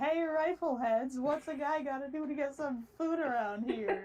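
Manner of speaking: brash, high, full-throated scream. Retelling how a character opens an episode: imitating Joseph screaming. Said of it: "opens up the episode screaming".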